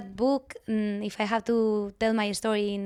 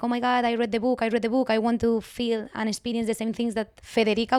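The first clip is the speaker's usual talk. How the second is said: plain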